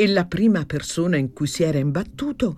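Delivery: ordinary delivery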